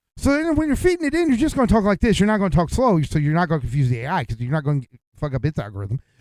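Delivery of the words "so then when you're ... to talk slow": extremely fast, hyper, rapid-fire talk, pitched up. Explaining how to record voice samples for an AI, talking as fast as possible. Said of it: "you're going to talk as fast as you can".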